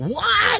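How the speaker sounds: very high-pitched, stunned, disbelieving. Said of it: "I'm like".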